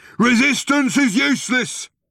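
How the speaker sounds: shrill, very high, loud bellow. Narrator reading a Vogon guard's line as he drags his prisoners along, bellowing. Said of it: "bellowed the guard".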